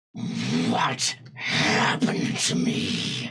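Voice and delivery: gritty, scraping, grainy dragon creature voice. Game master voicing a green dragon strolling out of its cave, rough, grainy dragon voice. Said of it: "it's very rough and very grainy".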